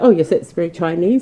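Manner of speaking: usual speaking voice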